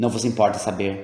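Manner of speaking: ordinary delivery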